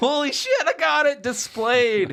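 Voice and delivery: put-on shrill, very high, obnoxiously loud drawn-out yell. Retelling winning a card game by flipping the top card: retelling an obnoxiously loud yell. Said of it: "I yelled so obnoxiously loud".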